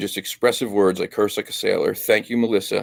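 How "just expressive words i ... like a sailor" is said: ordinary talk, nothing marked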